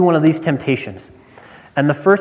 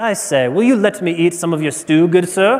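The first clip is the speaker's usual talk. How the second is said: stagey, put-on British accent. Speaker picturing Esau's request said in English, put-on British accent. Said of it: "picture it with a British accent".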